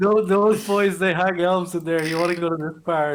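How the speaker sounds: loud, carrying shout.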